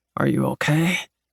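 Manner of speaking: growly, growling voice. Reading a romance scene, a man asking if she is okay: growly voice. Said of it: "he asks in that growly voice of his".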